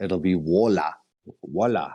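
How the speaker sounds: put-on Chinese accent. Joking about how names get pronounced, in a mock chinese accent, r as l. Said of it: "the Chinese can't pronounce the R? They call it an L".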